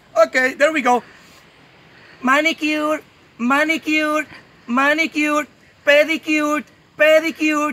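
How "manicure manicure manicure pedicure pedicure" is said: male speaker doing a slow, put-on woman's voice. A man trying to do the next voice as a lady: put-on woman's voice. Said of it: "the next one is going to be a lady. It's a little bit difficult because I'm a man".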